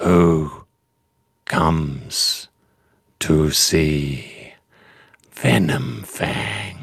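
voice of a mighty dragon. Narrating a dragon in a tower speaking from above, Venomfang dragon voice. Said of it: "that's a good voice".

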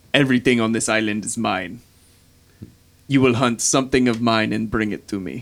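sinister, malicious, menacing dragon voice. Voicing an ancient red dragon speaking into a character's mind: sinister, malicious dragon voice. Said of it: "you feel this, like, sinister malice".

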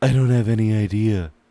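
booming, very loud put-on celebrity voice. Reading a story aloud, voicing the character Tuyet: Criss Angel voice. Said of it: "Is that Chris Angel?".

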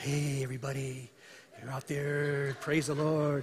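soft, slow, mellow, easygoing late-night radio host voice. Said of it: "it's like real soft and mellow".

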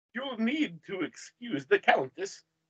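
put-on thick Eastern European accent. Game master voices a woman in the scene, heavy eastern european accent. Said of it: "says a woman with a heavy Eastern European accent".

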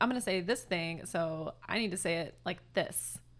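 ordinary delivery

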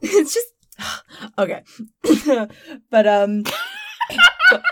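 very high, choking catch in the throat. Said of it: "I had, like, five hundred things caught in my throat".

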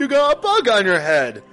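female giant voice. A player voices the female giant's line during play, in a female giant voice. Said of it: "The female giant goes".

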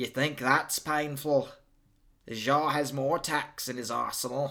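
put-on New Zealand accent. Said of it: "this is a New Zealand accent you're doing".

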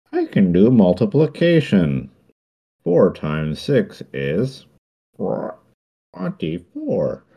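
loud, high 8-bit talking calculator voice. Describing a scene on screen, speaker imitates a talking calculator in an 8-bit voice. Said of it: "in that sort of 8-bit voice being like".

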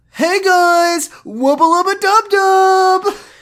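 very high, loud shouted yell. Reading out a listener's request on a podcast, in Josh voice. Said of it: "read this in Josh voice".

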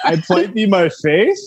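question-like upward lift at end on "faith". Vow line said with a question mark at the end: rise on faith like a question. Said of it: "like with a question mark at the end".

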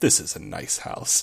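mock sarcastic tone, slowed. Describing a scene, the speaker acts out what he said, retelling a sarcastic line.

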